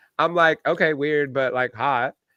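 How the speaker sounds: ordinary delivery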